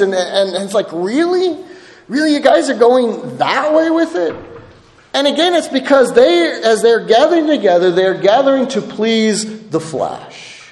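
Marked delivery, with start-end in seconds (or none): 0.9-4.3 frustrated, exasperated, incredulous tone, pitched up. The speaker acts out a man's reaction to what developed after he left: acting out exasperated frustration. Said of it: "you can just hear the frustration in his voice".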